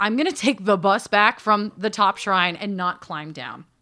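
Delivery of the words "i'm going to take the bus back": usual speaking voice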